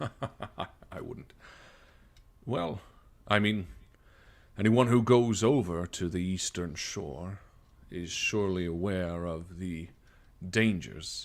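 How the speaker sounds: low, slow, deliberate, drawn-out voice. Narrator voices the captain answering the players, in a low voice. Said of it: "he sort of says with a low voice".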